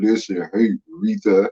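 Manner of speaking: very low, husky character voice. Recalling who did the voices, the speaker imitates Dion Ward's deep husky voice. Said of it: "he had a real deep husky voice".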